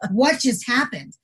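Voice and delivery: ordinary delivery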